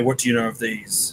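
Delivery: ordinary talk, nothing marked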